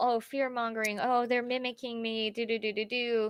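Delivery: ordinary talk, nothing marked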